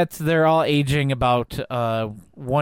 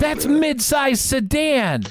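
put-on very high-pitched, thrilled, excited outburst; 13 semitones higher than usual. Retelling a scene where she spots a guy sitting by the rocks, mock very excited. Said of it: "she very excitedly says".

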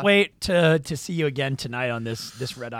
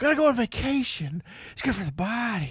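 elderly politician voice, put-on; 6 semitones higher, 4 dB quieter than usual. Showing how a comedian does Joe Biden. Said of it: "he speaks like that".

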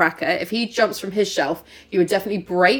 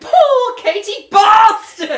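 mock angry, stern tone, higher and louder; 12 semitones higher, 7 dB louder than usual. Imitating their mum pointing at the object: imitating mum angrily scolding. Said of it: "So angry".

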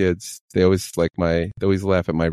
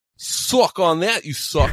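fake Australian accent, higher pitch; 10 semitones higher than usual. Trying out an accent for a sign-off joke: put-on Australian accent. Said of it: "Australian, I think".

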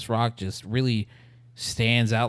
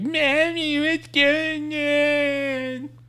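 put-on very high, slow, whiny child's voice. Retelling a movie trailer's grown kids speaking: annoying kid voice. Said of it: "that annoying sound kids make".

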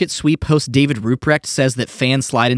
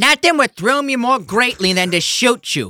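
put-on slow, high, stretched-out Italian American accent; 9 semitones higher than usual. Doing a Joe Pesci impression for the others: Joe Pesci impression. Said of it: "that's the worst Joe Pesci impre-".

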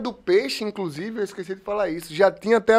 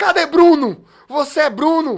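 put-on, loud, high, drawn-out cowboy-style yell; 7 semitones higher, 3 dB louder than usual. Telling of two cowboy-style men arriving with a revolver, retelling a shout. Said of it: "Gritando assim".

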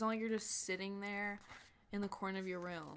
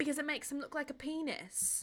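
put-on slipping into a pitched-up Australian accent; 7 semitones higher than usual. Quoting a woman in her accent, which comes out Australian-sounding accent. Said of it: "That was Australian".

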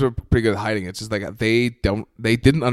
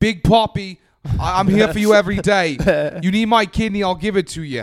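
very high-pitched put-on Boston accent; 9 semitones higher than usual. Announcing a comedy festival in Boston, made to do it in a Boston accent. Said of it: "you have to do it in that accent".

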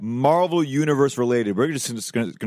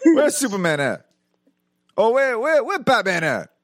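put-on old grandfather voice, pitched higher; 9 semitones higher than usual. Imagining an old grandfather watching Doctor Strange: old grandfather impression. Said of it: "he goes".

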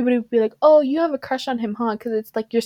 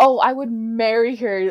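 mock, slow, heavily sarcastic, drawn-out tone. Retelling what classmates said about her: imitating a sarcastic remark. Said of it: "all sarcastic".

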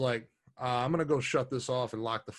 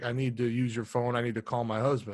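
put-on crying, tearful voice. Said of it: "she's fucking crying, can hardly understand".

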